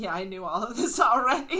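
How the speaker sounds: acted-out laugh. Recounting answering a woman in a sharing group, retelling a laughing reply. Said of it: "I kind of laughed and I was like".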